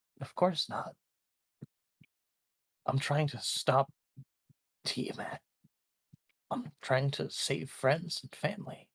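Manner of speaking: hushed, puzzled, confused voice. Narrating a tabletop scene, a character answering a warning not to go evil, confused. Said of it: "He looks confused and says".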